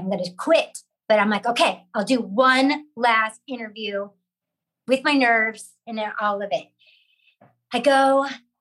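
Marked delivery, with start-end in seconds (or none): none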